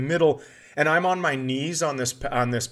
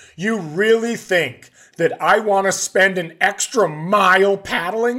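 slow, loud, high, drawn-out complaining scream; 5 semitones higher, 5 dB louder than usual. Retelling a paddling trip, quoting a companion: imitating someone screaming. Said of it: "She is screaming at me".

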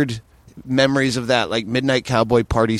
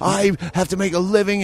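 put-on furious, livid outburst, higher pitch; 8 semitones higher than usual. Retelling a confrontation at a bar in Montreal: imitating a livid man. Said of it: "he was fucking livid".

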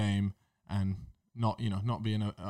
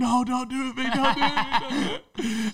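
mock screaming, very high-pitched and loud; 5 dB louder than usual. Retelling someone screaming during a game: imitating Harry screaming. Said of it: "just start screaming".

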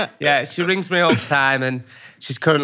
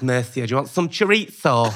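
put-on Spanish-style lisp on s sounds; 3 semitones lower than usual. Mocking someone who lisps thinking they're Spanish, put-on Spanish lisp. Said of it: "they do it with a lisp now because they think they're Spanish".

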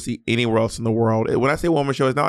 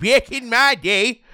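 put-on, very high little old lady voice; 11 semitones higher than usual. Teased about a voice she loves doing, the speaker uses her little old lady voice. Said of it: "your little old lady voice you love doing".

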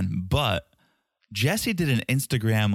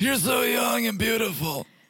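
put-on old man voice, pitched very high; 13 semitones higher than usual. Doing a bit with a co-host at the top of a podcast, in an old man voice. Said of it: "not do that voice at the top".

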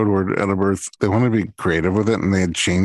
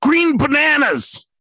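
mock sudden scream, pitched very high. Retelling how a woman in labor suddenly screamed a code word: imitating a woman screaming. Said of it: "all of a sudden she screams out".

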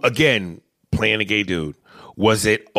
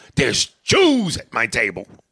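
heavy emphasis landing squarely on one word.

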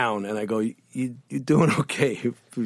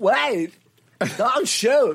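very high-pitched, thrown-up calling voice; 12 semitones higher than usual. Retelling a film scene, imitating Christopher Walken behind a rock: Christopher Walken impression. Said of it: "and he's like this".

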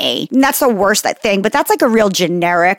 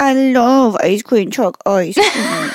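put-on, sulky, pouty delivery. Retelling what another speaker said about ice cream trucks: imitating a pouty friend. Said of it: "Ashley's pouty face when she was like".

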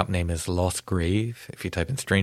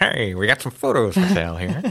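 put-on loud, swooping, old-fashioned old timey call; 4 semitones higher, 5 dB louder than usual. Speaker imagines selling old photos from a little cart, in an old timey voice. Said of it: "You got to use your old timey voice".

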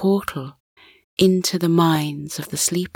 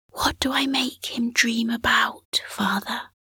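soft, hushed, pitched-up voice; 6 semitones higher, 4 dB quieter than usual. Narrator reads the young son asking his father a question, in a hushed voice. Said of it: "asked in a hushed voice".

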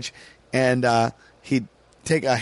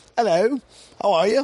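put-on British accent, pitched up; 8 semitones higher than usual. Retelling how a comedian greeted the crowd on stage: imitating a British accent. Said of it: "in the British".

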